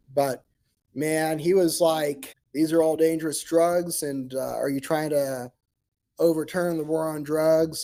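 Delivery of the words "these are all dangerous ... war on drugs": ordinary delivery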